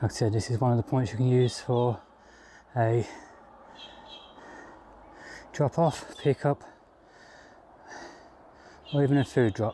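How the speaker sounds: breathless, panting. Describing a drop-off point on the track after climbing steps, out of breath. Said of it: "excuse me out of breath climbing them steps".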